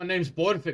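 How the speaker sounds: put-on dwarf warrior voice with Scottish accent. Voicing a dwarf in a cart who gives his name: Scottish accent. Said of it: "now I can't do his name and a Scottish accent".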